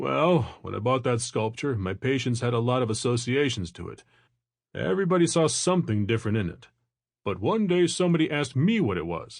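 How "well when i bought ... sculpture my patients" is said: ordinary delivery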